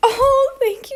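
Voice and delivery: crying while talking. Thanking Meg after finding out it was her, crying while talking. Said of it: "I'm actually crying".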